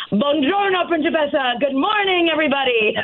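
mock booming, high-pitched, house-filling voice. Describing how he comes into the house as their daughter wakes up; imitating his booming voice. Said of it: "come booming to the house with his booming voice".

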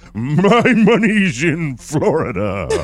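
horse impression voice. Telling a story, voicing the horse's answer in a horse impression. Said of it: "I did a horse impression".

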